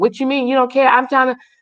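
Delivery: put-on angry, indignant tone. Retelling how she replies in an argument: imitating someone getting mad. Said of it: "And she gets mad".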